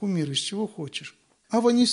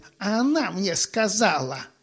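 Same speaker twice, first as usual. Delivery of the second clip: nasty, unpleasant, mocking put-on voice. Acting out a retold conversation about pharisaism, in a nasty put-on voice. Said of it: "еще и голос делаем такой противный".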